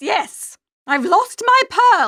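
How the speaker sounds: plain reading voice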